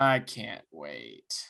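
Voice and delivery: unenthusiastic sarcasm. Looking ahead to the Martinsville trip, sarcastic, no enthusiasm. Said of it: "I can hear the enthusiasm in your voice".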